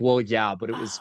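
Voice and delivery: play-acted modest, hedging, downplaying tone. An author recalls their book hitting bestseller, mock downplaying. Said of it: "trying to minimize it so hard".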